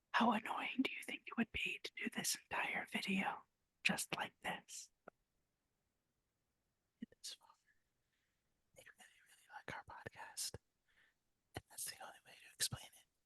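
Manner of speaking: speaking in a whisper. Podcast hosts doing their whole video in whispers, whispering. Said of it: "we are whispering".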